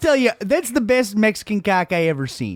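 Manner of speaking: jokey, faked, put-on Canadian accent. Bantering in a group, the speaker puts on a Canadian accent. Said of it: "good fucking Canadian accent".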